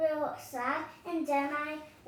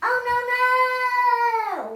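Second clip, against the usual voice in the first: very loud, high scream with the oh drawn out; 8 semitones higher, 12 dB louder than usual. The speaker demonstrates how they will scream, screaming super loudly. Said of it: "I would scream like this super loudly".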